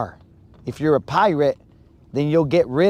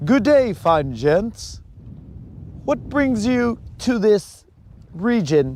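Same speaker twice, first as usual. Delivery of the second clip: prim, formal, polite courtly gentleman voice, pitched up; 6 semitones higher than usual. Joking about a proper man at a pirate convention: put-on polite gentleman voice. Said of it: "be there and be like".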